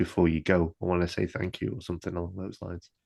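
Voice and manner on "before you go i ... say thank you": put-on whisper, quieter. Retelling what the librarian says before Jay goes: imitating a whisper. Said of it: "he kind of whispers it".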